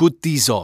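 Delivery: short, sharp, snapped delivery. Mr. Akram holds out blindfolds to the narrator: snapped. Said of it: "he snapped".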